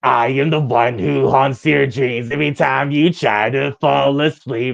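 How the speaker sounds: spooky, eerie, haunting, creepy voice. Asked to do that voice as a request, the speaker obliges, creepy voice. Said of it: "That's very creepy".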